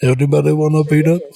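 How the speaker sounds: put-on giant voice, slightly Jamaican accent. Talking about how no one made fun of him, do an Andre the Giant impression. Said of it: "That's my Andre the Giant".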